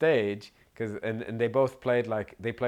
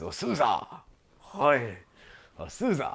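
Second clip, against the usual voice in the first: put-on sing-song elderly Japanese man voice; 3 semitones higher than usual. Telling a story about an old Japanese man approaching Nick, in an old Japanese man voice. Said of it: "Only [name] does the voice".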